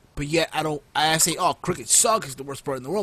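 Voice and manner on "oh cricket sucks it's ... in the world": ordinary talk, nothing marked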